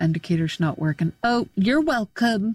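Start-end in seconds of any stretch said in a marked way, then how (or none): 1.2-2.5 high, mock, heavily laid-on sarcastic tone. Retelling a driver he let out who gave no wave: mock-sarcastic you're welcome. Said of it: "this really sarcastic".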